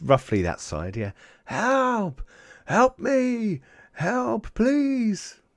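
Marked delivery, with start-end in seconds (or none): 1.4-5.3 put-on old man voice, distant calls, very high and stretched. Speaker voicing a distant old man calling from across the valley, old man shouting for help. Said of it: "an old man shout from across the valley".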